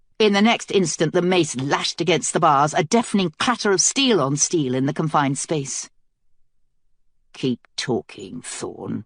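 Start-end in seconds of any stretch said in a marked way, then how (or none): 7.3-9.1 very low, hushed, quiet voice. Mace threatens Thorn through the bars, in a low voice. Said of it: "Mace said in a low voice".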